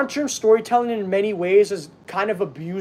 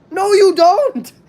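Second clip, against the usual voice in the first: loud, very high voice that cracks; 11 semitones higher, 7 dB louder than usual. Rebutting a quoted wrestling storyline line, voice cracking. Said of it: "my voice cracked so much during that".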